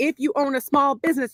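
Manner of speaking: ordinary talk, nothing marked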